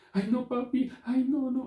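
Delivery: put-on very high childish pleading. Showing how a child manipulates its father: imitating a child manipulating father. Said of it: "así".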